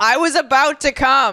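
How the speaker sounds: frightened shouting. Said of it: "And I literally just yell".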